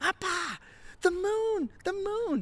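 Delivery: very high-pitched, drawn-out, thrilled excited yell. Speaker retells his son shouting to him in a quiet car, retelling an excited yell. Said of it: "Drew yells out".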